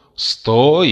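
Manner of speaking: full-throated, high, loud wailing yell. Someone stuck in a box stops a woman from fetching an axe; yelling. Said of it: "завопили из ящика".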